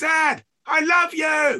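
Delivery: very high, very slow, drawn-out bellowed call. Retelling being a five-year-old calling to his dad at cricket; retelling a bellow. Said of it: "I just bellowed out".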